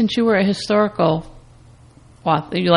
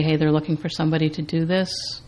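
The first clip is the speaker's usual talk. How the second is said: usual speaking voice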